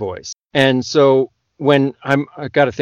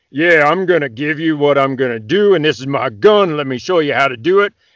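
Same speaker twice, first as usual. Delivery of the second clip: puffed-up, big macho guy bravado. Showing how some narrators voice male characters: big macho guy voice. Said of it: "this really big, like".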